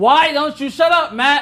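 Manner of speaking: loud, high, forceful, fully committed shout. Coaching a scene partner, showing the line with more push: loud, powerful delivery. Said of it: "More, come on".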